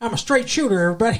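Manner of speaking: put-on Southern American accent. Explaining to the group why the character is a straight shooter, in a southern accent. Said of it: "That's why I did the southern accent".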